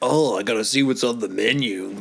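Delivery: eager, keen, smitten character voice. Retelling what Sanji says while walking around: imitating Sanji. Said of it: "And he's like".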